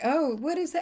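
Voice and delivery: witchy Southern belle voice.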